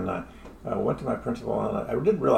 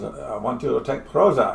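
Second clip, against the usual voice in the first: put-on German accent; 2 semitones higher, 3 dB louder than usual. Speaker quoting a new psychiatrist he didn't trust, German accent. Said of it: "he spoke with a German accent".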